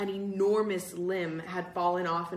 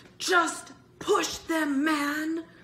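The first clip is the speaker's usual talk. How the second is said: very high, very slow, loud, drawn-out pleading; 10 semitones higher, 5 dB louder than usual. Bird urges Greg, who hesitates at the doors; pleading. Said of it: "Bird pleaded".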